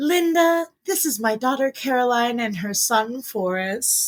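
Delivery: put-on woozy, drugged-sounding voice, pitched high. Retelling her mother introducing her to a nurse, imitating mom high on Dilaudid. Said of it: "but make it high on Dilaudid".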